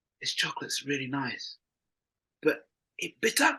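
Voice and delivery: mock whispering. Recounting what a man said to the speaker over dark chocolate, retelling a whisper. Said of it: "he just sort of whispered to me and went".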